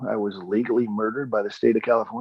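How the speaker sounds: ordinary talk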